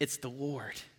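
soft, breathy, awed hush.

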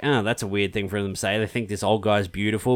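ordinary talk, nothing marked

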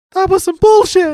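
very high, squeaky, loud outburst. Retelling what a wrestler said after a low blow: imitating Keith Lee's high-pitched voice. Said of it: "that was funny in the high-pitched voice".

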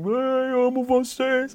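acted, soft, tearful crying, words very slowly drawn out. Retelling how Grammy winners reacted, imitating someone crying. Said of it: "Os caras chorando, assim".

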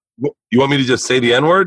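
ordinary talk

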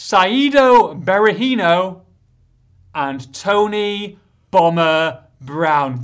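slow, deliberate, each item said slowly.

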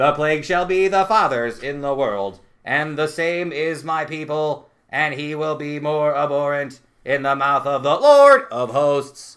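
slow, deliberate synthetic machine-reader AI voice. Asked to read a passage, reading it aloud in an ai voice. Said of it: "I assume I'm doing AI voice".

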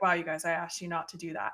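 mock disappointed tone. Retelling how a dad in a book scolds his kids: imitating a disappointed dad. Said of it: "he's disappointed".

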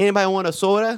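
put-on Wisconsin Midwest accent, broad vowels. Describing people from Wisconsin, the speaker mimics them in a Wisconsin Midwest accent. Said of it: "They got that accent".

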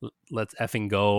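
ordinary delivery

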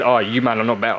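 plain

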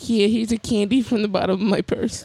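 put-on high-pitched little old lady voice. Joking with others about people they served, imitating an old lady. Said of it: "the old lady that'd be like".

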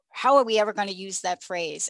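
ordinary talk

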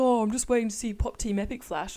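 loud, mocking put-on send-up voice. Retelling what the other speaker said while searching for tattoos: imitating a friend in a mocking voice. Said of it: "Don't do that fucking voice about me".

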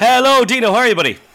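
screaming. Back on the podcast, a co-host greets the host, screaming into the mic. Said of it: "You're screaming that in my ear".

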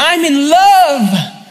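shrill, very high, all-out scream. Retelling a film scene where Ron screams: imitating Ron screaming. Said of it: "Ron screams".

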